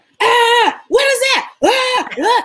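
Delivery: put-on very high, squealing screams in a child's voice. Imitating her son screaming while he plays PlayStation: imitating her son screaming. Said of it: "screaming, like, while they're playing?".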